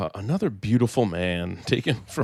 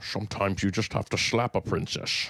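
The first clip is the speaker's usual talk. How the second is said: put-on Scottish voice, at times quieter; 2 semitones lower, 5 dB quieter than usual. Joking after Sean Connery is picked for a role: Sean Connery impression. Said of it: "in that, uh, impression".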